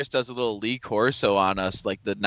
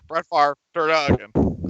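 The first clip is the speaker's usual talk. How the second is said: grumbling put-on sportscaster voice, higher-pitched; 5 semitones higher than usual. Put on the spot to do an impression: John Madden impression. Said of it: "Do a John Madden".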